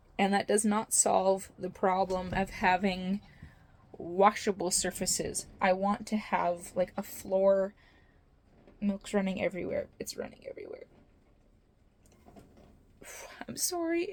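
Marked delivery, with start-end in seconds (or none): 8.8-14.2 upset, fast, tearful, crying through the words. Talking about a problem with the milk stand, crying. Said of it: "I don't even know why I'm crying about this".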